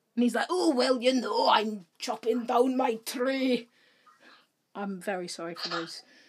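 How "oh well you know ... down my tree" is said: put-on regional Bristol accent. The speaker retells what Gerard said, imitating Gerard with a Bristol-sounding accent. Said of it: "That was a Bristol accent".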